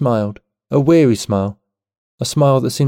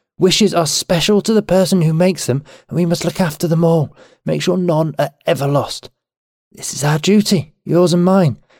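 fierce, impassioned insistence, pitched up; 5 semitones higher than usual. Reading a story aloud, she answers the narrator's question with fierce passion. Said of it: "she said with fierce passion".

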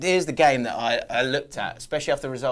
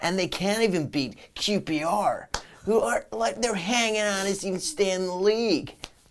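put-on condescending American accent, pitched up; 7 semitones higher than usual. Mocking how the americans talked about qpr: mock-condescending american accent. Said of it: "What's the American accent about?".

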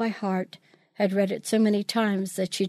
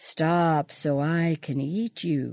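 sorrowful cow voice, low, mournful, very slow; 4 semitones lower than usual. A narrator reading a gingerbread story, voicing the cow, low and mournful. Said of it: "Peggy made the cow sound low and mournful".

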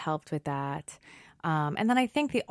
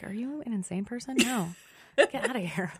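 put-on high, repulsed, disgusted little kid voice; 6 semitones higher than usual. A parent recalls reading a cockney bedtime story, imitating daughter's disgust. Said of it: "looked at me like".

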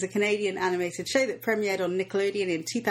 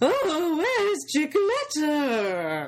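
high, swooping, animated cartoon woman voice; 8 semitones higher, 3 dB louder than usual. Speaker shows how they voiced the mayor from a Paw Patrol magazine: Paw Patrol mayor voice. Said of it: "I was doing a very good mare voice".

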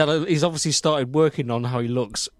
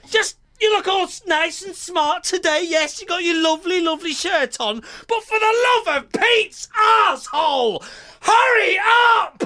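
fake yelling, higher and louder; 4 dB louder than usual. Hurrying another speaker to start the show late: mock shouting. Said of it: "Don't shout at me like that".

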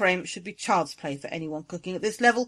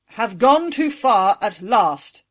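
booming, thunderous voice, slow; 2 semitones higher, 7 dB louder than usual. Trelesta rises to answer Angui's outburst before the throne, thundering. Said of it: "thundered Trelesta".

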